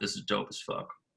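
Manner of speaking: very quiet, hushed, breathy whisper. Retelling what someone said while hearing the record: imitating Cahill's whisper. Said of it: "he whispered to me while he was listening".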